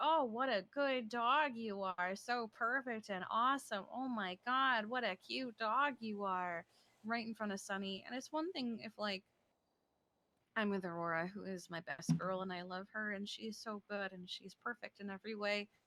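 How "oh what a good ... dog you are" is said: deliberately showy, very loud, drawn-out gushing. Imitating a woman praising another dog in front of the jealous dog, very loudly. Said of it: "She she very loudly goes".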